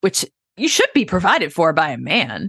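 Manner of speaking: dripping, exaggerated sarcasm with swooping pitch. Mid-discussion, delivering a line in a heavily sarcastic tone. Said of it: "this is sarcasm at its finest".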